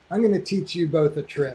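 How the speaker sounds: plain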